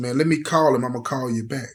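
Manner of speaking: ordinary delivery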